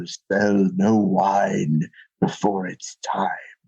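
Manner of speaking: deep, low, grand commercial announcer voice impression. Recalling an old wine commercial tagline, quoting it in a deep Orson Welles voice. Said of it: "in all his glory and his deep voice".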